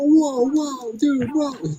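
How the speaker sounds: mock startled cry, very high, drawn out. Imagining the disciples reacting to a rude question: imitating shocked disciples. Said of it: "all the other, like, disciples are like".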